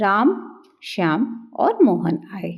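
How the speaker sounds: slow, short pause after राम. Explaining the comma after the first name in a list: short pause after राम. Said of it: "राम के बाद जो एक पॉज, एक विराम लिया हमने".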